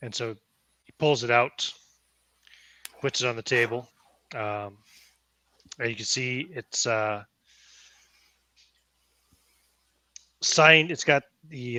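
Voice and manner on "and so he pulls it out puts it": usual speaking voice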